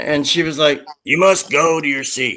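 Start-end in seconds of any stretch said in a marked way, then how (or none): 1.0-2.4 imitated growling voice. Retelling what a woman on the plane said: imitating a growl. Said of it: "she was growling at us like Tyrannosaurus Rex".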